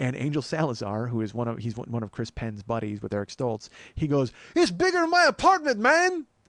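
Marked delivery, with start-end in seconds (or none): 4.6-6.2 high-pitched, loud, unnatural yelled delivery. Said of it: "he yells that in the most unnatural line reading".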